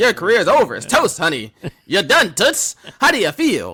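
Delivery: blunt, tactless interviewer patter. Mocking an interviewer's blunt questions after a match: imitating Mean Gene. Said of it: "Mean Gene just comes in".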